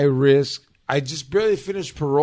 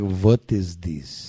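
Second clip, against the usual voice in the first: short line in a put-on Russian accent; 7 semitones lower than usual. Showing how a Russian would sound when cast in a role: put-on Russian accent. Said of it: "a Russian would be like".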